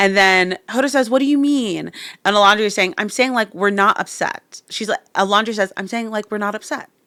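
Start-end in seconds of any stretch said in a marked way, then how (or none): 5.8-6.8 calm, soft, even-keeled voice. Retelling what Alondria said to Hoda, imitating Alondria's calm tone. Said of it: "Literally calm like that".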